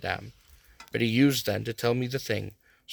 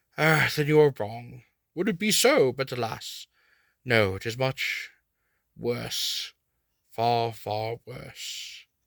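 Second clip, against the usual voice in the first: weighty, solemn, slow delivery. Narrator reads Van Helsing answering the narrator: solemn Van Helsing voice. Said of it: "Professor [name], / he said".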